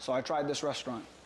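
low, flat monotone delivery. Imitating Keith Lee trying a random restaurant; Keith Lee monotone voice. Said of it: "he does it like monotone voice".

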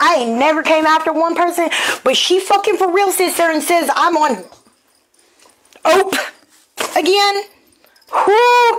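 heated angry rant.

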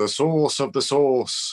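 put-on northern English accent. Retelling how mom said a phrase as kids teased her: imitating mom's Northern British accent. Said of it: "because of her English accent".

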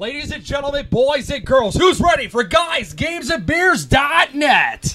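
hyped arena announcer voice, very high pitched. Asked by friends to do a monster truck announcement: monster truck announcer voice. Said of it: "could you do a monster truck announcement for us?".

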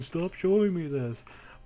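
mock yell. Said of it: "you're yelling at the screen".

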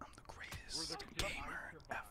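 soft, whispered, boastful tone.

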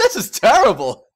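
incredibly loud outburst. Reacting to a character's death scene in the game: incredibly loud outburst. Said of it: "That came out of my mouth incredibly loud".

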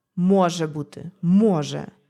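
with a sigh. The father answers the mother's disbelief about a letter, with a sigh. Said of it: "зітхає батько".

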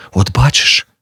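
frightened, scared voice. Narrator reads a woman's reply to the man at the door, frightened. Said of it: "злякано мовила вона".

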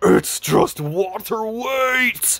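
demonic, possessed-sounding voice, pitched high. Retelling what a man on a TV screen said, demonic voice. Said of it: "He said in a demonic voice".

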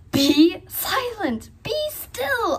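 high, shrill, piercing wizard's shriek. The wizard yells at the clanging, braying pot: shrieking. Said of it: "shrieked the wizard".

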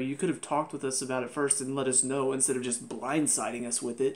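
normal talking voice

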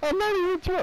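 voice cracking. Accused of being drunk and denying it, voice cracking. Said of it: "My voice cracked".

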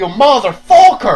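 sudden, abrupt, loud outburst. Quoting another line from The Room: imitating Tommy Wiseau's sudden outburst. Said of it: "talking to his wife, and he's like".

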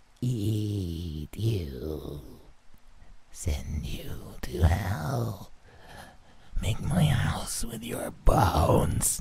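very soft, low gravelly voice, drawn-out "eat". Narrating a horror story, voicing her words to the narrator in a low, gravelly voice. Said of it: "In a low, gravelly voice, she spoke to me".

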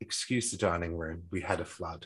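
plain

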